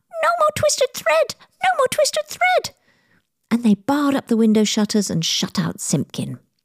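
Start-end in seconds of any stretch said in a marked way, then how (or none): 0.3-2.8 very high, tiny twittering chorus of mouse voices. Narrator reading the little mice all shouting at once, in little twittering voices. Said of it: "in little twittering voices".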